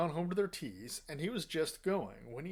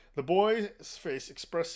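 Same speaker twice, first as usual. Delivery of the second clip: plain reading voice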